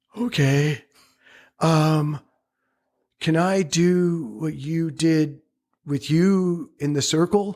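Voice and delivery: high, fumbling, tongue-tied, barely stringing words together. The speaker retells their own reply to another person, retelling fumbling words. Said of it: "Barely putting words together".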